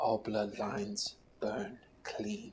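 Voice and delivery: quiet, soft, hushed whisper. Voicing a prince in a player's dream as he raises his sword: whispering. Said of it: "Landolf whispers".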